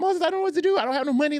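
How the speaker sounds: acted-out tearful, very high-pitched, rushed crying. Speaker re-enacts calling a line brother from the terminal with no money: retelling crying. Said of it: "I am in the terminal crying".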